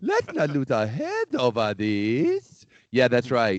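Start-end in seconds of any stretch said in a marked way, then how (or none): 0.0-2.6 put-on French voice, higher. Quoting Napoleon from a divorce lawyer commercial: Napoleon impression. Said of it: "Does he talk like this?".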